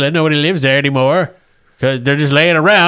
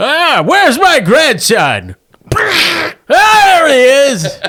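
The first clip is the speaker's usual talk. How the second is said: put-on very high voice of an old grandpa; 10 semitones higher, 3 dB louder than usual. Narrating a tavern scene, the speaker voices an old man who hobbles in, old man voice. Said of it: "an old man hobbles in".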